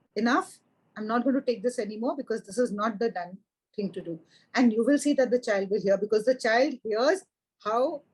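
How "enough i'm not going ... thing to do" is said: normal talking voice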